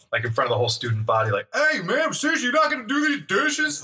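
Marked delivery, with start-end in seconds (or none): 1.5-3.8 put-on very high, high-pitched yelled call-out. Retelling yelling out the window at the roommate: retelling a yell out the window. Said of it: "I'm yelling out the window".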